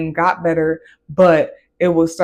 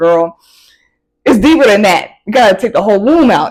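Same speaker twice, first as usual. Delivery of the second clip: loud, amused, talking through laughter; 3 semitones higher, 8 dB louder than usual. Retelling a parent's reply at fourteen: imitating mom laughing while talking. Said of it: "She was laughing like".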